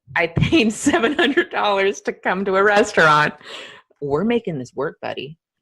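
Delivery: mock-serious, heavy sarcasm with swooping pitch. Riffing in conversation about paying seven hundred dollars, super sarcastic. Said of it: "I'm just being super sarcastic".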